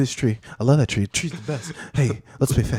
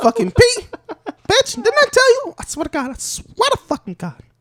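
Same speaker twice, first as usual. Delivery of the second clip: very high, squeaky cartoon dog voice; 4 dB louder than usual. Imagining a Texas Chihuahua arguing with a Mexican Chihuahua, squeaky cartoon Chihuahua voice. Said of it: "You sound like Mickey Mouse".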